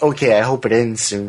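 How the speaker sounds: ordinary delivery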